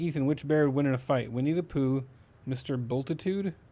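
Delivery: ordinary talk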